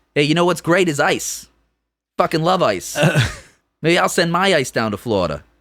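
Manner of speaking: put-on Boston accent. Joking in a group conversation, doing a Mark Wahlberg impression with a Boston accent. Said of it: "It's a Mark Wahlberg thing".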